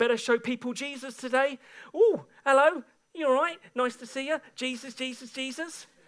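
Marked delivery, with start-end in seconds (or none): 1.9-5.8 put-on, overly sweet cheerful tone.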